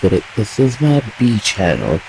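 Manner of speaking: normal talking voice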